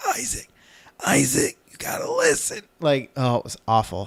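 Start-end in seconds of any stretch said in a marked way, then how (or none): 0.1-2.6 imitated weak, quiet voice, much higher, slower. Retelling trying to be heard over their talking kid, imitating a voice that can't get loud. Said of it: "I literally couldn't get loud enough".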